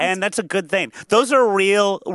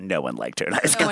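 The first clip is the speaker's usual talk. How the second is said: very low, muttered under the breath; 12 semitones lower, 5 dB quieter than usual. Watching along and retelling what Candace says, retold under her breath. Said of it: "She literally just goes under her breath".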